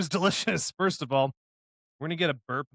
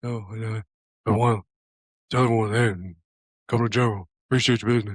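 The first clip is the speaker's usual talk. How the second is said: put-on soft, near-whispered voice, lower pitch; 5 semitones lower, 6 dB louder than usual. Doing a Shaq impression after being asked: almost whispering Shaq impression. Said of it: "He talks like, he's, like, almost whispering".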